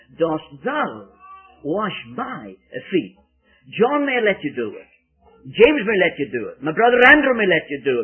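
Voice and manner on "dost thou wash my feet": heavy stress on thou and my. Putting emphasis on the pronouns in Peter's question: stress on thou and my. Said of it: "I put the emphasis on the words, the pronouns".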